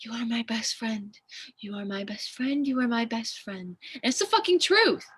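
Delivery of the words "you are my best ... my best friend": hushed, soft half-whisper, repeated over and over. Retelling words once said to a dying friend: retelling a half-whisper. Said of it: "And I whisper to him".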